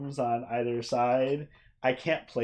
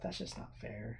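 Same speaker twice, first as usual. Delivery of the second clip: barely whispered, grumbling mutter under the breath; 15 dB quieter than usual. Voicing a character who finds another asleep on a desk: mumbled under breath. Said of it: "I mumble under my breath".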